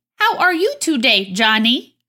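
mechanical, robot-style electronic voice. Host opening a Twin Peaks podcast, greeting Johnny in an electronic voice. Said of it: "That was my best electronic voice I could muster".

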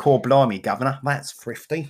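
over-the-top, exaggerated, put-on Cockney accent. Joking about a food shop for people abroad, in an exaggerated cockney accent. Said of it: "The Americans love it when we do that voice".

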